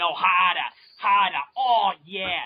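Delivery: put-on loud, annoying screaming in a Boston accent. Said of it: "you have that annoying Boston accent, you know, when they start screaming".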